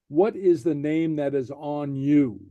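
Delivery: ordinary delivery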